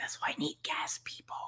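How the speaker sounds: soft, fast whisper, aside-like.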